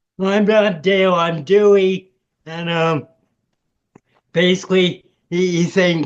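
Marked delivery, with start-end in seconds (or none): 0.2-2.1 furious yell at half force. Recounting snapping at a staff member who kept calling the speaker Dale: retelling a furious yell. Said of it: "I started yelling at the top of my voice".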